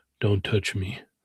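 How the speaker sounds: imitated extremely deep voice. Acting out a lookalike stranger turning around: imitating the deepest voice ever. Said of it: "He says the deepest voice ever".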